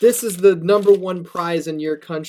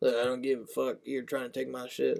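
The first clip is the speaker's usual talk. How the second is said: put-on Southern accent, lower and quieter; 6 semitones lower, 14 dB quieter than usual. Imitating a wrestler backstage, pissed off: imitating Roman Reigns with Southern accent. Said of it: "I don't know why he's Southern".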